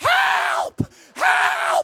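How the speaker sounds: very high, drawn-out scream like a maniac. Retelling how she climbed on the toilet and yelled out the window, retelling a maniac scream. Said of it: "starts screaming like a maniac out the window".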